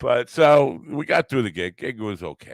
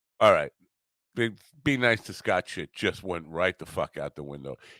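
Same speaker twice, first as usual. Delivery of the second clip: plain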